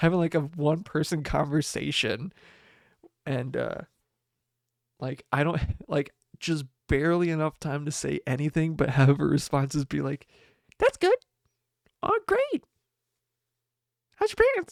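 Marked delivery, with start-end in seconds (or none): 10.8-14.7 very high, funny voice, quick rattled-off chatter. Describing the speaker's girlfriend's one-person conversation bit, imitating girlfriend's funny voice. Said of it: "she's developed this like funny like bit of doing like this voice".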